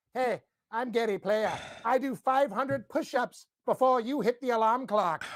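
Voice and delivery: boastful, show-off bragging voice. Retelling meeting Gary Player at the Masters: imitating Gary Player. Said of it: "He's like".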